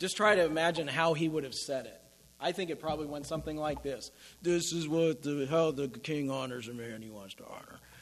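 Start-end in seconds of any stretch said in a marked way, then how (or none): 4.4-7.8 put-on gritted teeth, lower, quieter, slower. Retelling how he would have proclaimed the king's honor, imitating speaking through gritted teeth. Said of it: "Or gritting his teeth".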